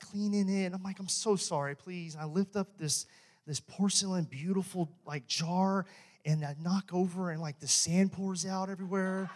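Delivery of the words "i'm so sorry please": put-on embarrassed tone, quieter. Retelling spilling coffee and scrambling to clean it, retelling an embarrassed apology. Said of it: "i'm like so embarrassed".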